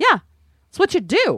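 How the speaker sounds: mock smug, very high-pitched, self-satisfied brush-off. Retelling a childhood reply to a casting producer: imitating her own smug reply. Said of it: "really smug about it".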